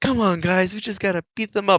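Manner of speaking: feeble, extremely weak attempt at a tough-guy voice. Mocking a movie character who sounds like the weakest guy in a fight club, imitating a weak-sounding guy. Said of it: "he sounds like the weakest guy in the world".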